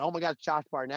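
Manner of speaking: put-on yell, called out lightly, carrying far. Retelling bumping into a former champion at WrestleMania: imitating own yell. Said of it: "I yelled out".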